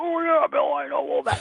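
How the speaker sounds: high-pitched, gravelly, growling put-on old-man voice.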